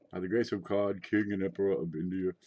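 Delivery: deep, low voice. Reading out the king and emperor title aloud: deep voice. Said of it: "you have to say it with a deep voice".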